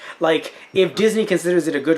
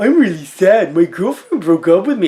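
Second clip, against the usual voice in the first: teasing, silly, mocking dopey voice, raised; 3 semitones higher, 4 dB louder than usual. Showing how mocking a friend's voice would sound: mocking impression of Tristan. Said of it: "doing an impression of his voice".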